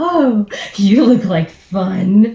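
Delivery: slow, grinning delivery, "fun" drawn out. Describing their character's action, then speaking in character, grinning. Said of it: "pin my ears and kind of grin like".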